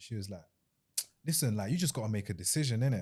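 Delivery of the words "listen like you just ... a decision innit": short, curt, snappish impatience. Retelling a phone call in which she snapped: imitating someone snapping. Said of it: "she kinda snapped at me".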